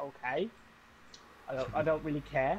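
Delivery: plain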